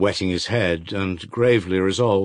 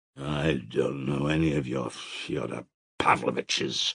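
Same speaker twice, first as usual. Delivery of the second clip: heavy, thick-tongued, slow, low speech; 6 semitones lower, 6 dB quieter than usual. Narrator voicing the peasant answering his questioner, speaking thickly. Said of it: "speaking thickly".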